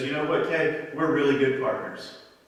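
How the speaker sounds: normal talking voice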